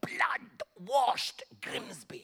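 put-on German accent. Retelling own past preaching, imitating Reinhard Bonnke: German accent like Reinhard Bonnke. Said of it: "why did you do it in a German accent?".

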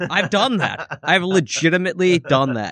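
ordinary talk

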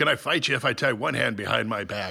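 put-on Irish-sounding accent. Quoting a line from a film in Ernest Borgnine impression. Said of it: "I'm doing my best Ernest Borgnine".

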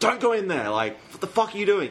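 loud yelling.

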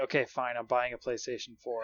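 ordinary delivery

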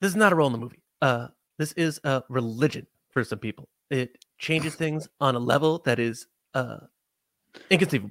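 grand delivery, hard stress on final word. Reading a quote aloud as J J Abrams: J J Abrams impression. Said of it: "let's see if I can do J J right now".

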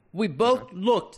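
put-on British accent. Reading a man's quoted account aloud, attempted British accent. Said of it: "I'm gonna try my best on a British accent here".

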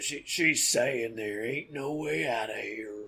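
mournful, sad, low voice. Game master voices a figure calling down from a treehouse in a sad, low voice. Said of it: "a sad, low voice from up in the treehouse".

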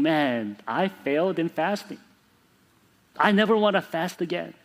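put-on downcast, dejected, defeated lament. Retelling words said to a mentor after failing a fast: imitating own dejected words. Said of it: "I went to my mentor all dejected".

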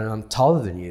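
ordinary talk

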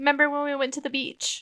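mocking, high, hushed, soothing sweet voice.

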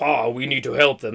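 too-deep, low grown man's voice. Speaker retells a story, voicing the son pleading with his father, in a too-deep voice. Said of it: "It's too deep".

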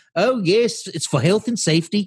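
put-on Australian accent. Quoting commenters in a group, unintentionally in an Australian accent. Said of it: "I just said an Australian accent".

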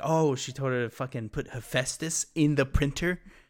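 ordinary talk

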